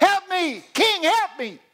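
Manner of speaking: very shrill, very loud, drawn-out scream. Retelling a famine story, a woman pleading with the king: imitating a woman screaming. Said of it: "You hear a woman screaming".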